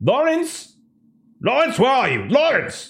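very high, swooping, furious angry shouting. Voicing an angry doctor calling over the comms: angry shouting voice. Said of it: "angry voice".

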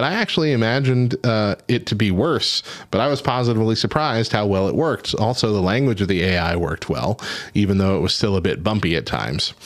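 plain

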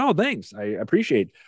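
mock snarky, dry, sarcastic tone. Speaker acts out answering online commenters, retelling a sarcastic remark. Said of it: "make a sarcastic remark back".

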